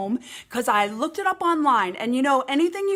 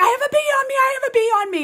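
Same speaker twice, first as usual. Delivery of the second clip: shrill, high, loud, frantic, panicked, repeated pleading tone; 10 semitones higher, 4 dB louder than usual. Retelling running into the hallway with a bee on them, retelling a loud frantic cry. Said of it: "I run out into the hallway".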